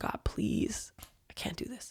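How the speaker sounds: mock hushed, pleading, begging whisper. Speaker recounts being on their knees after punching every door, retelling a begging prayer. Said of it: "I was like on my knees begging".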